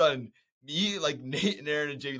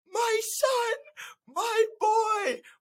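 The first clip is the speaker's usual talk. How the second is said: very high, very slow weeping, crying voice; 3 dB louder than usual. Retelling a film scene where the dad cries over his son: imitating Cedric Diggory's dad crying. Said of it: "And he goes like".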